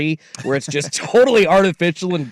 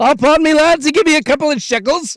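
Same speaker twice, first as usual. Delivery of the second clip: fake Irish accent, pitched very high; 11 semitones higher, 3 dB louder than usual. Joining in as an Irish buggy driver asking for payment: put-on Irish accent. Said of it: "Irish dudes, too, with the accent".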